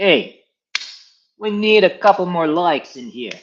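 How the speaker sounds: thick put-on Brooklyn accent, loud and slow. Imagining how the helper talks, in a heavy Brooklyn accent. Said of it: "you have, like, a heavy Brooklyn accent".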